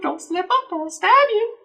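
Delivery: put-on old woman voice. Retelling what an old lady threatened, in an old lady impression. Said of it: "that's my old lady impression".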